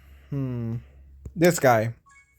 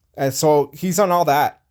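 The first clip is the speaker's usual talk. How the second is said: usual speaking voice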